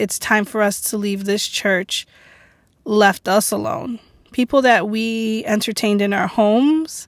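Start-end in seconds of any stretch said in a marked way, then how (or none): none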